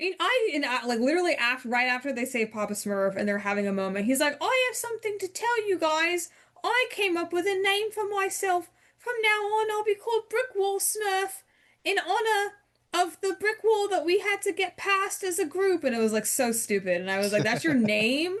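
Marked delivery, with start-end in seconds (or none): 4.4-15.8 very high-pitched put-on British accent. Retelling a guy announcing his new name to the group, British accent. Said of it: "a British accent".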